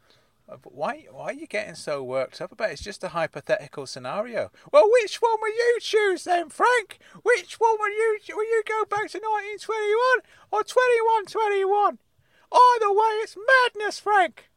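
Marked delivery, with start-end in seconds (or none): 4.7-14.3 put-on angry old man voice. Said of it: "Uncle Claude has got so angry".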